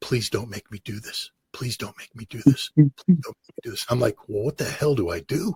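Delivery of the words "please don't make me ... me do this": soft, barely voiced whisper, repeated. A man retelling what his assigned translator whispered to him, imitating a whisper. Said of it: "She's just whispering to me".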